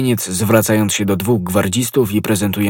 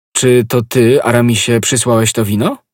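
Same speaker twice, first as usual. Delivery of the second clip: ordinary delivery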